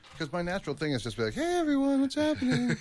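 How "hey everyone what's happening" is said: much higher, loud, high-pitched voice. Big guy shows how he greets everyone: higher-pitched greeting voice. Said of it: "a higher pitch for me".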